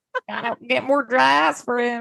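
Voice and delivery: put-on, mock country accent. Joking with another speaker about a man kept frozen: put-on country accent. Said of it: "I don't know what my accent is".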